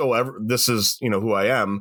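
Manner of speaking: ordinary talk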